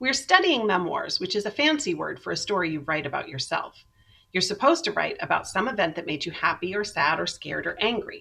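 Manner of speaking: ordinary delivery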